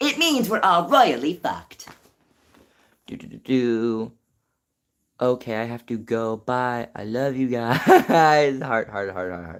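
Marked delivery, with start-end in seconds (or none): 0.0-1.9 news-anchor voice, high-pitched and swooping. Acting out a mock news broadcast with co-anchor Tom: Katie Killjoy voice. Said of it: "Katie Killjoy sounding news station voice".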